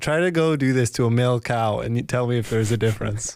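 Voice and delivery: ordinary talk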